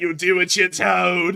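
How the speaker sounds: grand, posh voice. Retelling a line he said, imitating Conor McGregor sounding like an English aristocrat. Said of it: "sound like an English aristocrat when he said that".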